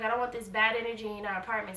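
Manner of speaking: plain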